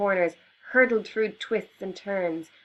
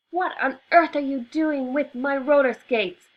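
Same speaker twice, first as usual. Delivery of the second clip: furious, angry scream, pitched high; 6 semitones higher, 3 dB louder than usual. Reading a story aloud, the sister catches her brother: screaming angrily. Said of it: "Mary screamed angrily".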